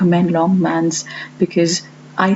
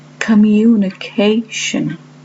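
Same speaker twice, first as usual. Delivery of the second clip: communication with a loud, clear, stressed ca; 3 semitones higher than usual. Lesson on where stress lies in long words: loud, clear CA in communication. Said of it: "this long word has syllable stress on the fourth part, and it is this part which is then said loudly and clearly".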